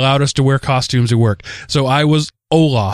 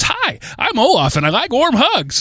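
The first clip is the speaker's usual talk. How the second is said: very high, slow sing-song; 11 semitones higher than usual. Showing how little Olaf greets people: little Olaf voice. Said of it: "little Olaf says".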